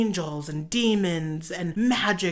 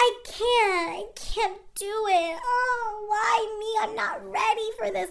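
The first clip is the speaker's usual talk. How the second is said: very high, self-pitying, complaining whine. Recapping a show, imitating the newly married wife, mocking whiny voice. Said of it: "puts on this whiny voice".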